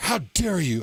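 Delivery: put-on shocked, scandalized, appalled and indignant exclamation. Retelling what a wife said after a purchase was refused: imitating an appalled wife. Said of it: "And she was appalled".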